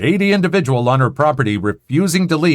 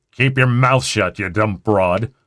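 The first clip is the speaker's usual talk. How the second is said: deep, low growl through every word; 4 semitones lower than usual. Reading a story where the grandfather silences a neighbor: growling. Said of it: "Grandfather growls".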